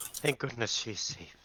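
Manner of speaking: put-on Irish-sounding accent. Speaking a line in character in a game: Irish accent. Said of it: "Are you an Irish?".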